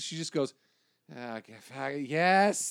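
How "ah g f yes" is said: very slow, worn-out, weary delivery. Retelling a woman's answer when asked about the show: imitating someone weary. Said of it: "she was already tired of talking about it".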